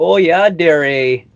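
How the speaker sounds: put-on Upper Michigan accent. Describing the people of Upper Michigan, mimic their weird Canadian-style Yooper accent. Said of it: "this weird Canadian style accent where they'll be like".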